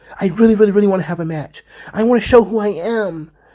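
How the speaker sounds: put-on high, chatty teenage mall-girl voice. Mocking how a kid who wanted a match sounded, imitating a teenage mall girl. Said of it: "he sounded like a teenage girl in the mall".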